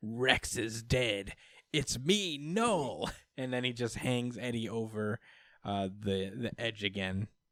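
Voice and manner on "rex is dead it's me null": creepy voice, very slow. Retelling a comic where a voice comes out of Rex: creepy Null voice. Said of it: "just creepy voice comes out of Rex".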